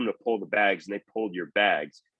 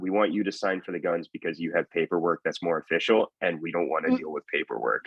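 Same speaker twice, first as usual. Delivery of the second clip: put-on whisper, lower; 4 semitones lower than usual. Retelling what the sergeant said to the speaker: imitating someone whispering.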